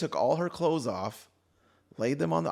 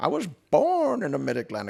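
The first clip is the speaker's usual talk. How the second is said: masked villain voice, higher, louder; 5 semitones higher, 6 dB louder than usual. Joking with another speaker about a movie villain's accent, in a Bane voice. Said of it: "Bane's accent is too far off from the Mid Atlantic".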